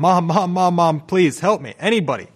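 put-on desperate, high, pleading screaming. Recalling being put in a chokehold, retelling screaming for help. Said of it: "I was screaming".

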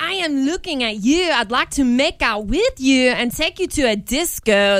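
clumsy, bad put-on Polish accent. Acting out the dialogue of a made-up storyline, in a bad Polish accent. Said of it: "That was like my bad Polish accent".

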